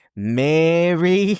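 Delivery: loud, high put-on Australian accent, name drawn out. Joking about what she will try next, say it in an Australian accent. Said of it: "she can just go Australian accent".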